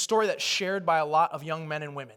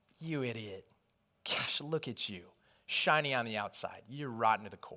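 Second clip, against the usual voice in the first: mock accusing, berating voice; 6 semitones lower, 7 dB quieter than usual. Voicing the accuser who mocks after a fall, imitating an accusing voice. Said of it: "he loves to accuse us".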